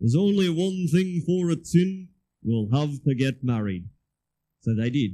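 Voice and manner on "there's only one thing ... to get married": put-on raised Liverpool accent. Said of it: "in his best Liverpudlian accent".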